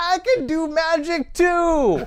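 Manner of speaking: very high, shrill, very slow, drawn-out scream. Retelling a magic trick where a friend pops out: imitating someone screaming. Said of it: "his head pops out and he screams".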